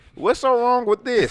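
put-on hillbilly voice. Imitating a hillbilly who ties nooses and sees no problem: imitating a hillbilly. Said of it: "some hillbilly motherfucker who goddamn just tied".

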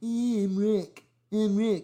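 mocking, put-on impersonation voice. Teasing a guest by impersonating him: imitating Rick. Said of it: "I'm gonna do my Rick impersonation now".

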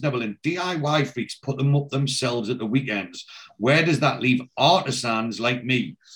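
ordinary talk, nothing marked

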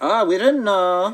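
put-on German accent. Recalling a German guy, speaker quotes him: German accent. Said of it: "I'm not going to do a German accent, and really dove for it just now".

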